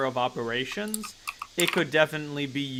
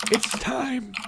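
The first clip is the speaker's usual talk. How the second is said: put-on very high, elderly old-person half-whisper; 10 semitones higher than usual. Narrating a player's character far in the future: half-whispered old person voice. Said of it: "That was such a good old person voice".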